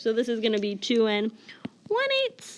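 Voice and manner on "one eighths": very high, piping voice. Counting the denominator of fractions aloud, in a high voice. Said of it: "in my high voice count my denominator".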